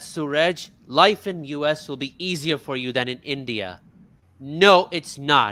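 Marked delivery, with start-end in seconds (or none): none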